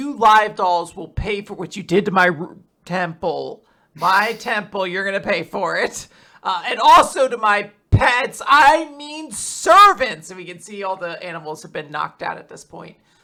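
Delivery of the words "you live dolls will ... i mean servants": enraged, loud, furious screaming rant. Retelling a comic chapter, acting out the sun god screaming at the dolls: imitating someone screaming angrily. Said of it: "screaming, and he's just like".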